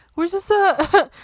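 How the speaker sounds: high-pitched, mocking, put-on innocent tone. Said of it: "they justify themselves being like".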